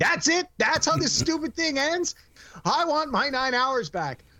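very high-pitched, put-on fed-up, ticked-off yell. Retelling a reaction to a series' final episode, retelling yelling at the TV. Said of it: "I yelled at the TV".

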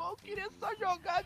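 mock crying while talking. Retelling being chased off a pinball machine as a kid: imitating himself crying. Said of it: "eu chorando, mesmo falando, chorando!".

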